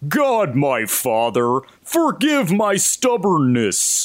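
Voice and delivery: very goofy cartoon voice with swooping pitch. Recounting something they just heard said, quoting it in a very silly cartoon voice. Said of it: "like a very silly cartoon voice say".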